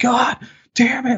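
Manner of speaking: shrill, very high-pitched, pained scream. Retelling a ride that hurt, the speaker reenacts his own scream. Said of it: "like screaming".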